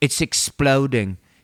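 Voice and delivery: fake English accent, heavily laid on. Retelling an interview answer from Mick in a put-on English accent. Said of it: "I'm just gonna do it in English accent".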